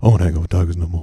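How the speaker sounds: put-on deep celebrity voice. Retelling a celebrity's reply to angry tweets: Shaq impression. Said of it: "my Shaq impression".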